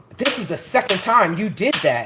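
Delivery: very loud, commanding, authoritative tone, acted out. Retelling an accusation someone made: imitating an authoritative tone. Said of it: "an authoritative, uh, tone".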